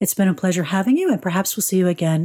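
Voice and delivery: ordinary talk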